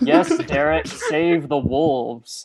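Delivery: loud, mocking, swooping sarcasm. Speaking to Derek in character during a fight: sarcastic. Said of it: "I say sarcastically".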